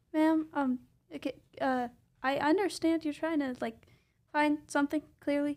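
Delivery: put-on timid, hesitant boy voice, shy and slightly stumbling. Player has Van approach a woman with a gash, timid Van voice. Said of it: "he's kind of a timid boy".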